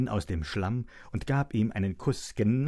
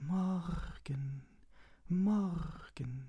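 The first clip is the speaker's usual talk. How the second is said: whispered, higher in pitch and quieter; 7 semitones higher, 8 dB quieter than usual. A butterfly answers the greeting called to it: whispered. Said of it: "flüsterte der Schmetterling im Wind".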